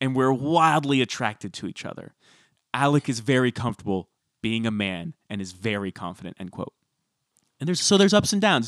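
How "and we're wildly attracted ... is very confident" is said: plain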